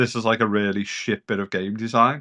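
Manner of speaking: ordinary talk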